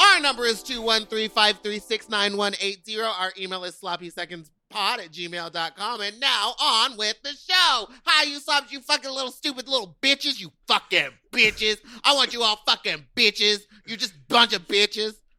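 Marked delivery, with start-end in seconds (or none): 8.0-15.1 fake-aggressive, hostile, ranting delivery. Greeting the listeners at the start of the show: mock hostile. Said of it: "You're so hostile today".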